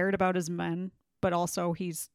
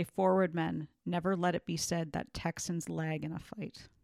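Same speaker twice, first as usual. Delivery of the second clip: ordinary talk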